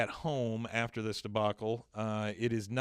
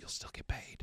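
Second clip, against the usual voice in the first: soft, hushed, breathy whisper. Retelling how the teacher whispers to her: retelling a whisper. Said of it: "the teacher comes over and whispers to her".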